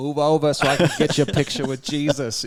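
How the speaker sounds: put-on thick Boston accent, laid on. Retelling what someone boldly said to her, quoting it in a heavy Boston accent. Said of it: "In this heavy Boston accent".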